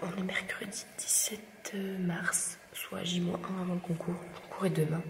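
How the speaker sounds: hushed whisper. Filming early in the morning while everyone sleeps: whispering. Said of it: "je chuchote".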